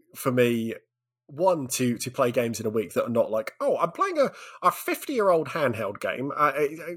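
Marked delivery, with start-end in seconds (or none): 3.6-6.7 high, smug, snobby voice. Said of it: "That's, that's what you sound like".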